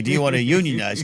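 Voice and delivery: ordinary talk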